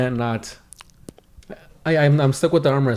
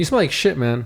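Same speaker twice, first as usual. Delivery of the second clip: ordinary talk, nothing marked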